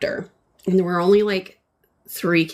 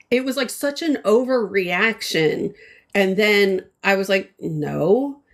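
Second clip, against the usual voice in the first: normal talking voice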